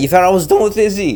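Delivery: voice cracking. Going off on a rant about someone, voice cracking. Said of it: "that was a nice voice crack".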